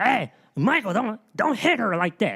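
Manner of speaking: high-pitched, grouchy, squeaky yelling. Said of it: "Oscar the Grouch with a high-pitched voice".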